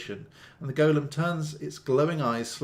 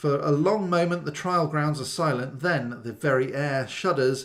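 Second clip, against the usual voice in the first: usual speaking voice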